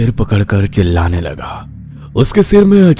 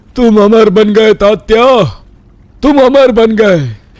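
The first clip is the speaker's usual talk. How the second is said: very high, elated, joyful shout; 13 semitones higher, 5 dB louder than usual. A man sees a beheaded man's head grow back and cries out to him: shouting with joy. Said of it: "[name] अमर तो बन गया था, / [name] जान गया कि अब वो हमेशा हमेशा के लिए इसी दर्द के साथ जीता रहेगा। / [name] खुशी के मारे कूदने लगा और वहां से भाग गया।".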